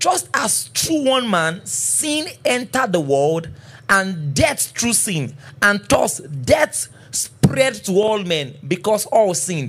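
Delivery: slow, deliberate reading pace.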